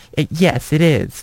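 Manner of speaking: snooty, mean, high-pitched catty voice. Retelling a girl's reply about the beautiful girls club, mock catty. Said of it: "Like trying to be all catty".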